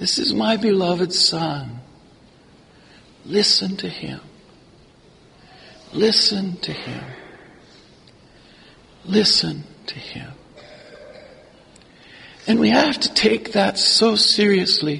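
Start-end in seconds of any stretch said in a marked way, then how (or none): 0.0-10.3 quiet, gentle, soft murmur with heavenly quality. Imagining the voice the three men heard, speaking gently as the Father. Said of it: "the voice of the Father gently".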